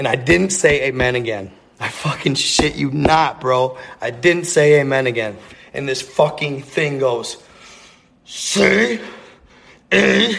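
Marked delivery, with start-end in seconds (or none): 8.2-10.4 rough, growly, high creaky voice. Speaker retelling what a thing said to him, in a growly voice. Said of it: "it's in that growly voice just like that".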